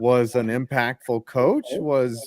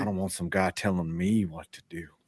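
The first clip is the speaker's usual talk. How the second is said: put-on old voice, lower and quieter; 6 semitones lower, 8 dB quieter than usual. Quoting the team owner in a Jerry Jones impersonation. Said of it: "who had the better Jerry Jones impersonation".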